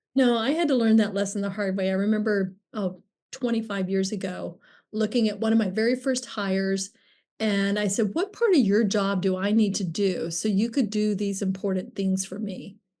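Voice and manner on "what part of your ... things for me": dry, needling sarcastic tone. Retelling a remark to one of the first hires: imitating own sarcastic tone.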